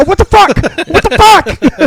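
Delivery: very high, drawn-out, animated frustrated exasperation. Retelling the joke's ending as the download stops: imitating a comedian, frustrated and animated. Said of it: "It's the most animated I've ever seen".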